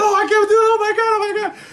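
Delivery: very high, giggling and laughing through words. Retelling how the girlfriends reacted to the cursing bird: imitating laughing while talking. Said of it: "all her girlfriends are just laughing like crazy".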